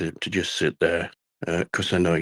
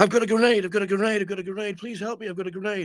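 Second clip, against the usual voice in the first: very high, breakneck, rattled-off panicked babble. Telling a story, the speaker acts out a man at the window, speaking very fast. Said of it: "speaking very, very quickly".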